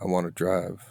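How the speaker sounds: flat, emotionless delivery with no feeling at all. Doing a line from the repertoire with no emotion, flat Ryan Gosling impression. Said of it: "Just forget you have emotions and just speak in a normal voice".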